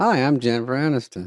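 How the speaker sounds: put-on glitchy AI voice. Showing how good AI copies are now: glitchy AI Jennifer Aniston voice. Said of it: "It's got a few glitches".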